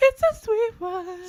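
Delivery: piercing holler, very high and very loud. Trying the catchphrase again after a first attempt: high-pitched hollering voice. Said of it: "Make [name] holler".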